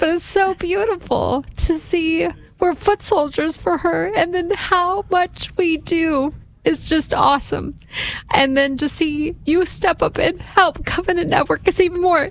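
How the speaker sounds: high, tearful crying voice. Thanking Legion of Mary members from the mic: crying. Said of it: "And yes, I'm crying".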